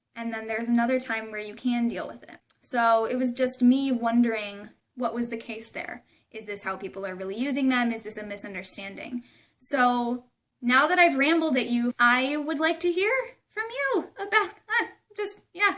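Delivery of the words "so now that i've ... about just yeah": very high-pitched voice, breaking. Inviting listeners to share their thoughts, with a voice cracking. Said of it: "my voice is cracking".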